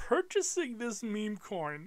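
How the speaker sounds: holding back laughter. Reading a quote aloud from a website, holding back laughter. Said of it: "I'm trying to keep it together right now".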